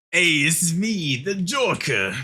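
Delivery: put-on Boston accent character voice. Told their accent suits it, the speaker plays along: Boston-accent Joker voice. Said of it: "Why did I have to do a fucking Boston accent".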